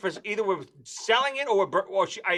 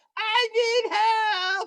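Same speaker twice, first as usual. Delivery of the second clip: put-on very high, drawn-out, desperate wailing scream. Retelling the night someone vomited in the sink: imitating someone screaming. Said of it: "He's screaming".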